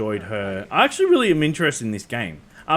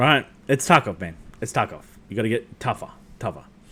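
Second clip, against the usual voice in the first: normal talking voice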